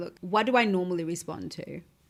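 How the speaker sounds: ordinary talk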